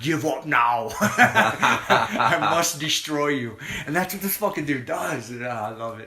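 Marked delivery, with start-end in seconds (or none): 0.0-3.6 put-on thick Russian accent, broken English. Imitating a fighter taunting his opponent: imitating thick Russian accent, broken English. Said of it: "his broken English and the thick Russian accent".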